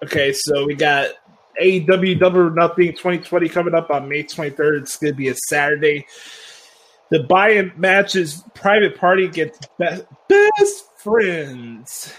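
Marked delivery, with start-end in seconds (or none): 7.1-12.1 big, swooping, sing-song announcer delivery with pitch swings. Running down a match card: Justin Roberts impersonation. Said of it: "That's my, uh, Justin Roberts, uh, impersonation".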